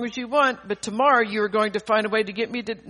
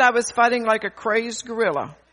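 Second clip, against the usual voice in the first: usual speaking voice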